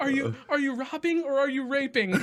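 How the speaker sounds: acted-out panicked scream. Retelling a movie scene where a time traveler gets grabbed, retelling a panicked scream. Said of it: "he's screaming".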